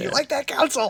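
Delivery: put-on shout. Retelling someone who was imitating Counsell and shouting at him: imitating someone shouting.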